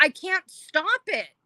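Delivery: play-acted high yelling, dragged out slow. Retelling a moment of not being able to stop: retelling own past yell. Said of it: "and then I was yelling".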